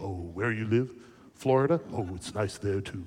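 deepest bass rumble, very low voice. Retelling a wrong-number phone call from a caller: imitating a very deep voice. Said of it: "this deepest voice I've ever heard".

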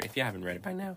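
voice cracking. Talking about the first book series they started with, voice cracking. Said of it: "the voice crack".

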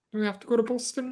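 put-on soft, gentle, high-pitched British accent. Discussing a movie scene, quoting Max: Max's British accent. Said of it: "Max dons a British accent".

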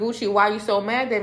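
ordinary talk, nothing marked

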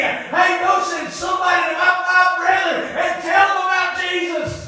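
play-acted mild cry. Preaching about folks in hell, acting out the rich man: imitating someone screaming. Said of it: "down there screaming like the rich man did".

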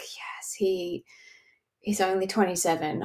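soft, thrilled whisper to oneself. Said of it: "I was actually like".

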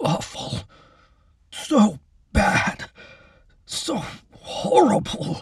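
gagging, retching, very slow, heaving words. Keith heaves himself up from the ground and speaks, retching. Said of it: "he retched again".

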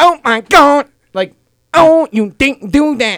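put-on Korean accent, pitched high, extra emphasis. Speaker demonstrating different accents to a group: put-on korean accent. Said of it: "if I want to do Korean".

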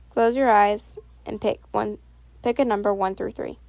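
ordinary delivery

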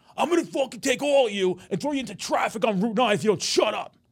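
mock, pitched way up, loud, threatening yell. Quoting a kids' instructor threatening his class: retelling a threatening yell. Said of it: "they'll get yelled at by the instructor".

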